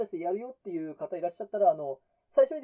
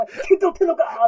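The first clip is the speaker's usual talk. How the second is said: very loud bellowed shout; 7 semitones higher, 11 dB louder than usual. Retelling how his wife yelled at him from behind, the speaker acts out a loud shout. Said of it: "って大声で来たんですよね".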